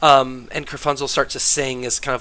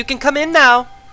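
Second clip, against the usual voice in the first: shrill, high, very loud shouted yell; 13 semitones higher, 8 dB louder than usual. The narrator voices a woman calling the knocking party inside, yelling. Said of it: "she's yelling".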